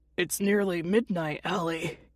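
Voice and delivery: rough, raspy, hoarse voice. Reading a story where a woken uncle answers the door: raspy voice. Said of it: "he says with a raspy voice".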